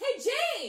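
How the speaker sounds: shrill, booming, very loud, high-pitched shout. Voicing a character looking down at the two players: shouting in character. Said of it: "and he shouts".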